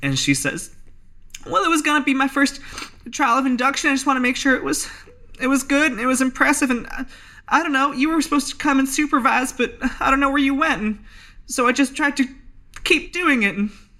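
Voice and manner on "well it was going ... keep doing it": very high, tearful, on the verge of crying. Asked why she did something so stupid, Elsie Spratt answers with tears welling up. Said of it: "And tears start to well up in [name]'s eyes, / And tears start to well up in [name]'s eyes".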